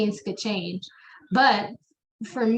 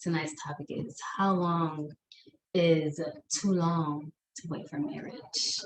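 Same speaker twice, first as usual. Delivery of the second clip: low, soft late-night radio DJ voice; 5 semitones lower, 7 dB quieter than usual. Co-host introducing tonight's topic on their late night talks, Quiet Storm voice. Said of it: "I'm putting on the Quiet Storm voice".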